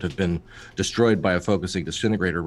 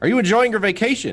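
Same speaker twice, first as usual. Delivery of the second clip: put-on, far too loud, very high-pitched voice; 4 dB louder than usual. Acting out sitting down next to someone and asking: far too loud. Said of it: "in a voice that is far too loud".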